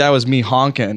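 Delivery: ordinary talk, nothing marked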